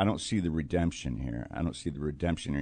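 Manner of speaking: usual speaking voice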